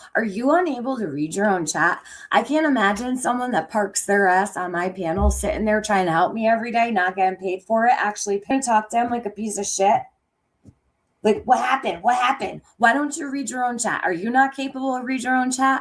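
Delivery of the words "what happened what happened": put-on angry voice. Retelling what a woman said to a helper on her panel, mock-angry repeated question. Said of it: "Do you hear how angry she is?".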